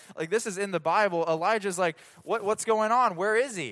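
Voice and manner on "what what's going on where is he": put-on sarcastic, mocking, taunting jeer. Retelling a prophet taunting rivals whose god won't answer: imitating a mocking taunt. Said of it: "Elijah starts taunting them".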